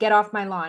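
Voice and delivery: ordinary talk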